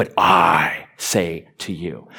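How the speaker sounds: the word "I" stressed heavily. Showing the only way to read a Sermon on the Mount line, strong stress on 'I'. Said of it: "But I in boldface, ... You have to say it like that".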